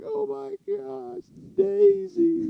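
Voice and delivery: sobbing, very high, very slow, drawn-out crying. Retelling how a man cried over his hit dog: imitating someone crying.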